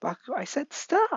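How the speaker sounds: frantic, very high-pitched panicked cry. Narrating the story, Deku cries out to Bakugo: panicked Deku voice. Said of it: "Deku is panicking, saying".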